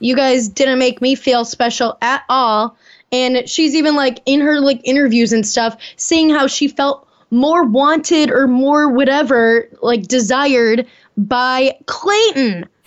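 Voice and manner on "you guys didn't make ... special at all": ordinary talk, nothing marked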